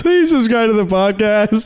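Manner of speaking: fake sobbing in a pleading, begging tone. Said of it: "do cry [name]".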